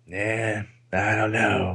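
low, very slow, dragged-out mutter. Retelling a scene from the show in a little Rick Grizzly voice. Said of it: "in his, like, little Rick Grizzly voice".

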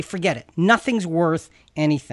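normal talking voice

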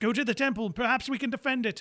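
very high-pitched yelled shout. Voicing a wounded fighter who tells the boys to retreat: yelling to the boys. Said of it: "he yells to the boys".

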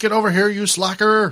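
high, hollered yell. Describing a movie character yelling through a door; imitating someone yelling. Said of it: "He's like".

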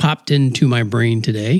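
ordinary delivery

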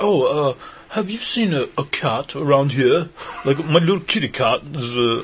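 poor put-on British impression. Retelling what a guy on someone's patio said when he saw him, in a bad British accent. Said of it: "that's the worst, like, British impression".

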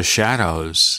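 emphasis on "the shadows". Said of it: "you have to emphasize the word the shadows".

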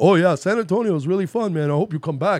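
put-on Mexican-American accent on every word. Describing the last Uber driver on leaving town, imitating his Mexican accent. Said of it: "one of those Mexicans that like talks like this".

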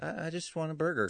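meek, humble, sweet, modest, slightly high voice. Acting out a character's line from a film: imitating humble, sweet voice. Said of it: "very humble, sweet".

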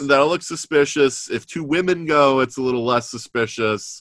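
ordinary talk

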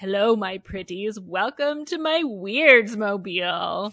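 loud, slow, creepy drawl with words drawn out. Retelling the bus driver greeting someone as he opens the door, creepy Crazy Eddie voice. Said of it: "there's like this creepy voice that's like".

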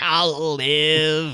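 shrieking, drawn-out, stretched alien voice. Retelling a movie scene where a character shrieks an answer: shrieking E.T. voice. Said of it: "shrieks out in, like, an E T voice".

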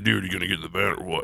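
cartoonishly deep, soft dude voice. Imitating a guy with a very deep voice, in a cartoonish low voice. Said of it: "That was like cartoonish low".

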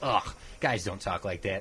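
put-on disgusted, appalled, dismissive tone. Retelling a girlfriend's reaction to a movie: imitating a disgusted girlfriend. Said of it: "she was just disgusted".

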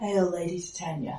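soft, sorrowful, grieving tone. Caelan returns Lady Titania's greeting: sad voice. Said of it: "And Caelan sounds sad too".

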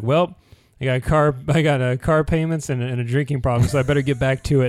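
relaxed, everyday, casual conversational character voice. Retelling a homeless character's line from a show, imitating his conversational manner. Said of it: "the part where he's like".

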